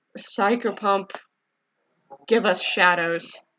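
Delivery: muttered under the breath. Playing a character casting a spell on a companion: muttered under the breath. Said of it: "mutter, uh, under my breath".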